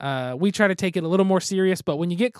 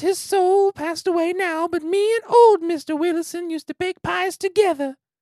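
put-on creepy old-man voice, very high pitched; 11 semitones higher than usual. Running through a series of character voices, now the Family Guy old man voice. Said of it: "to the old man and Family Guy who wants to give kids candy".

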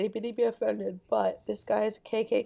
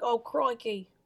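put-on "crikey" exclaimed in an Australian accent; 3 semitones higher than usual. Showing the other speaker how the man talked, do a Steve Irwin impression. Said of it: "the guy who he talked like this".

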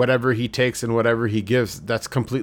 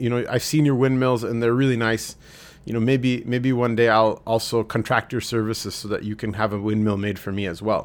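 ordinary talk, nothing marked

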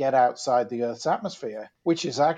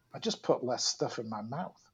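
baffled, bewildered, super puzzled delivery; 9 dB quieter than usual. Retelling a friend's answer about losing weight: imitating Jay Parrish sounding super puzzled. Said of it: "super puzzled and said".

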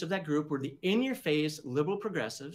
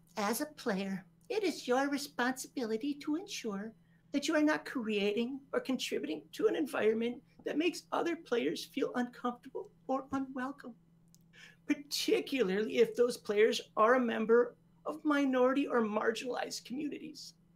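put-on whiny voice, high-pitched; 7 semitones higher than usual. Reading a passage from a book aloud, apart from his commentary, in a whiny voice. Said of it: "Is the whiny voice".

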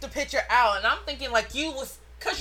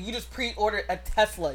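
ordinary talk, nothing marked

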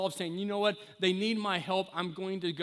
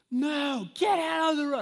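all-out, loud, high-pitched acted yell; 8 semitones higher, 6 dB louder than usual. Retelling yelling at a young child in the road: imitating own past yelling. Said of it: "I start yelling".

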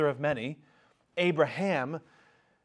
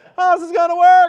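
very high, very loud, shrill, exasperated outburst; 16 dB louder than usual. Voicing God answering Abram's doubt: mock-exasperated Jerry Seinfeld impression. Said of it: "God always turns into Jerry Seinfeld in my impersonation".

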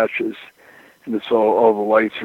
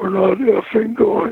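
wild, over-the-top tantrum, very high pitched; 12 semitones higher than usual. Retelling Pillman refusing to go to the lodge, as Pillman's mock tantrum. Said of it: "threw such a over-the-top tantrum".

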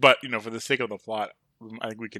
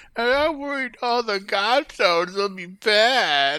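really whiny, whining voice; 12 semitones higher, 7 dB louder than usual. Speaker asks to try the line in a really whiny voice. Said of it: "can I try it in like a really whiny voice?".

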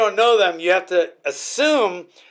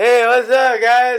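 loud, drawn-out, put-on tipsy drunk voice; 5 semitones higher, 5 dB louder than usual. Retelling pretending to be drunk at parties at fourteen: imitating a fake drunk voice. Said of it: "pretending I was drunk".

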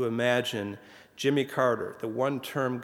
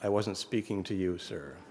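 soft, quiet, steady, level tone; 4 semitones lower, 5 dB quieter than usual. Retelling an anecdote, one man answers another's bellowed interruption; retelling a quiet, even reply. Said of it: "said in a quiet, even voice".

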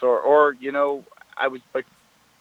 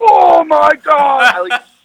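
shrill, very loud, high-pitched scream; 14 semitones higher, 11 dB louder than usual. Retelling seeing a message while on the toilet, retelling a scream. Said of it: "I screamed".

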